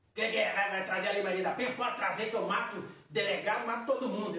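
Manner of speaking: menacing tough-guy voice. Imitating a husband full of hate toward his wife: imitating a hateful bullying husband. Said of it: "marido com ódio de mulher?".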